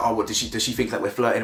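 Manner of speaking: ordinary delivery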